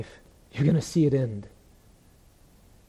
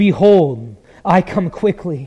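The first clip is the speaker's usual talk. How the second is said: loud, eager, excited voice. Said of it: "Do you hear the excitement in Jesus' voice?".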